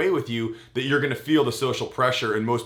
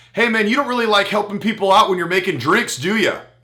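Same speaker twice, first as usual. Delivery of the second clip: loud, raised call-out; 8 semitones higher, 7 dB louder than usual. Retelling calling out a drink maker so the whole café could hear, retelling a raised voice. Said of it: "I raised my voice to the level that the majority of people in Panera could hear".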